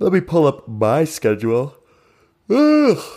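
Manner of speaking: speech stretched by yawn. Recalling who played on day one, pulling up a schedule, yawning. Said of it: "Pardon my yawn".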